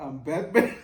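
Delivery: reading through laughter.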